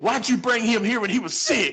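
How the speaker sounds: furious, high-pitched yell at full tilt. Retelling how a friend's mom yelled at Jeremy, retelling a mother's angry yell. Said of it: "she's yelling at Jeremy".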